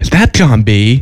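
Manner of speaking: put-on slow, unhurried delivery in a Canadian accent. Retelling what Darwin said in the green room near night's end, imitating Darwin's Canadian accent. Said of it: "in her Canadian accent".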